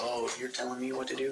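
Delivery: normal talking voice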